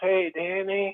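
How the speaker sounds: very slow, soft, dragged-out speech. Retelling how the speaker's brother finally greeted him; imitating Doug's slow voice. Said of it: "with a very slow voice".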